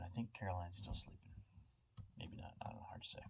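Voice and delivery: very quiet, hushed, near-whispered talk. Talking while other people are still sleeping, talking quietly. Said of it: "I'm talking quiet because people are still sleeping".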